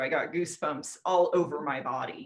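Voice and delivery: ordinary delivery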